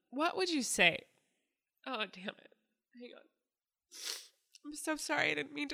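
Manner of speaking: tearful crying, voice cracking and breaking apart. Asking Nicole a question, the speaker unexpectedly starts crying, voice breaking. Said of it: "I didn't know I would start crying like this".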